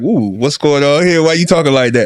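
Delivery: startled, uneasy, nervous, alarmed woman's voice. Acting out a woman clutching her purse: imitating a nervous, alarmed woman.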